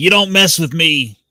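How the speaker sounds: play-acted defiant, screaming, loud, high battle cry. Speaker imagines their custom figure going into battle; imagined screaming battle cry. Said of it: "he goes into battle like screaming".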